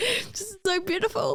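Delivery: very high, nervous, teary giggle near tears. Getting emotional remembering six years ago, speaking with nervous laughter near tears. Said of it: "I'm laughing when I'm nervous because I'm gonna cry".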